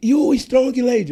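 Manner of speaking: put-on very high, loud, encouraging shout. Retelling shouting to a woman, hand on her shoulder, re-enacting a shout. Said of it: "Mas eu gritei".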